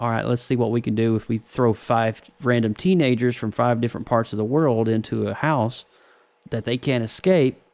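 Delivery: normal talking voice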